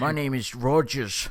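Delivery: put-on Irish accent. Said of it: "That is awful".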